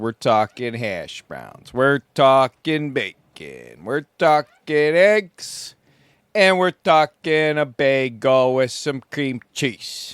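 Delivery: put-on Chicago sports-fan voice and accent. Listing what he will cook for breakfast, in his Chris Farley Chicago Bears voice. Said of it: "that's my Chris Farley Chicago Bears voice".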